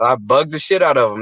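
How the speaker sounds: ordinary delivery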